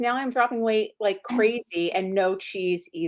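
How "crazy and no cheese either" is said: normal talking voice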